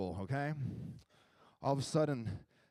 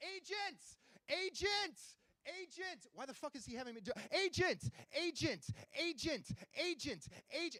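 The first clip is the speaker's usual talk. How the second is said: shrill, very high, drawn-out, repeated screaming; 9 dB quieter than usual. Retelling a partner yelling at a customer service phone tree: imitating girlfriend screaming. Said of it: "She's just screaming at this thing".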